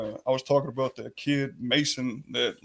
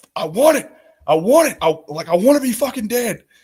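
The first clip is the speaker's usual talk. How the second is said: desperate, anguished, high, very loud full-volume scream; 8 semitones higher, 12 dB louder than usual. Recounting a past therapy session, retelling a scream. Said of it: "I was screaming like".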